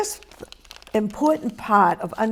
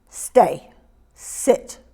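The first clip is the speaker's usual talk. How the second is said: sharp, low-pitched, curt delivery. Demonstrating the sharp tone for giving commands. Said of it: "That's that tone".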